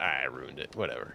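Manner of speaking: ordinary delivery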